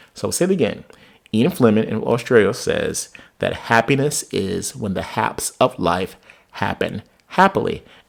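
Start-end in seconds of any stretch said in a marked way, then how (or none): 1.3-7.8 drawn-out, unhurried, slow, measured pace. Speaker repeats a quoted saying again for listeners, speaking slowly. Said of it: "I will say it slowly".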